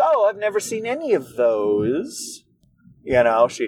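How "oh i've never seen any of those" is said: upturn at the end lifting "those". Retelling what she said to him about movies, imitating a rising upturn at the end. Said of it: "she put the, the upturn at the end of the sentence".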